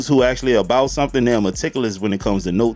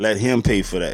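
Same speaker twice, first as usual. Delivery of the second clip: ordinary delivery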